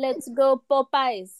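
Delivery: slight put-on French accent. Retelling the ribbon cutting at a popeyes opening in france: little french accent. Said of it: "I like the little French accent in there".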